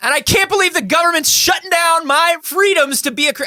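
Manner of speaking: very high, fake, agitated, worked-up outburst. Joking about the government shutting down freedoms: mock worked-up rant. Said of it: "I didn't mean to get worked up".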